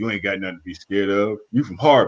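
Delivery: deepest low bass voice, dropped to the floor. Retelling meeting Kevin Garnett at Mr. Irvin's house: deep-voiced Kevin Garnett impression. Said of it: "with the deepest voice".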